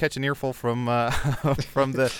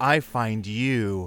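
the most seductive, sensual, sultry voice possible; 3 semitones lower than usual. Retelling what a woman in a VR porn scene says: imitating a sensual voice. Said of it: "the most sensual voice".

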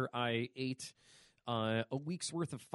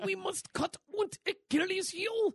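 put-on German accent, pitched high; 4 dB louder than usual. Acting out a character's line while recapping a scene, in a put-on German accent. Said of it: "you're way better at that than I am".

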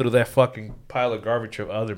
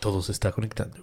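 put-on Spanish cartoon voice, quieter; 8 dB quieter than usual. Doing a requested impression of a movie character's Spanish line: Kronk in Spanish impression. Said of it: "the Kronk in Spanish".

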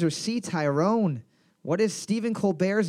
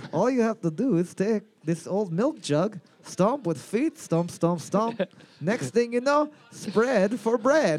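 exaggerated, silly, laid-on Russian accent. In a comedy bit, speaking in the accent of the Count from Sesame Street. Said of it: "doing the accent of the Count off of Sesame Street".

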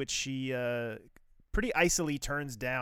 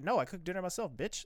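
put-on matter-of-fact tone, higher pitch; 5 semitones higher than usual. Retelling a TV scene, imitating Luca's reply: mock matter-of-fact tone. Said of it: "very, like, matter of fact about it".

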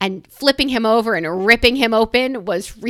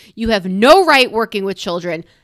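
ordinary delivery

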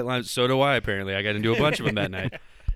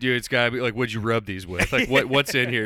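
ordinary talk

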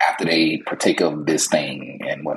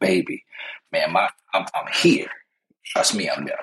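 ordinary talk

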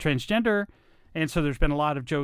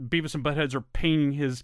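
normal talking voice

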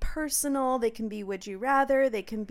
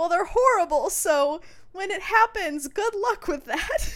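high, shaky, distraught voice; 9 semitones higher, 4 dB louder than usual. Retelling a woman's reply in a conversation, imitating a distraught woman. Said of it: "she sounded really distraught".

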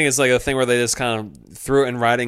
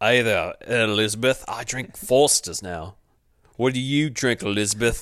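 thick, put-on Australian accent. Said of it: "what is this accent?".

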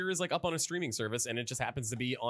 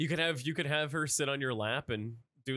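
ordinary talk, nothing marked

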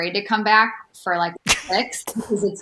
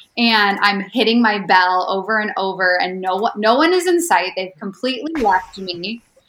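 plain

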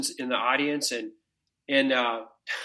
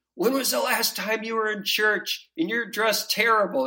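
put-on high, harsh, projected shout; 7 semitones higher than usual. Retelling how a man in a suit interrupted their prayer: imitating someone shouting. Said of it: "shouting at us".

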